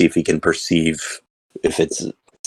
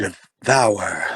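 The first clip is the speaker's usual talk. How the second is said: meek, timid, fearful, cowardly voice; 3 semitones higher than usual. Repeating the creature's word aloud to the party: cowardly voice. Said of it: "in a cowardly voice".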